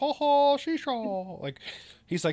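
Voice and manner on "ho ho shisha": "ho ho" belted loud and high-pitched. Quoting a movie Santa line: Tim Allen as Santa voice. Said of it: "like Tim Allen from the Santa Claus when he goes".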